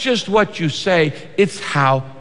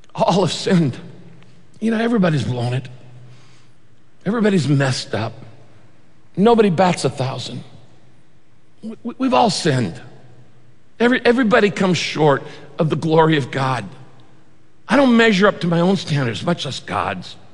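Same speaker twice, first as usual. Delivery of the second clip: plainly stated, heartbroken, matter-of-fact sorrow. Imagining how Jesus would speak to the world, as Jesus with a broken heart. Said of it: "I think he'd say it with a broken heart".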